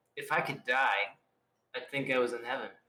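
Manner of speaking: low, quiet mutter under the breath. Speaking in character while walking through a festive town street: under the breath. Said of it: "maybe under my breath".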